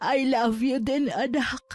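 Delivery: tearful, slow, crying. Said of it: "Bakit po kayo umiiyak?".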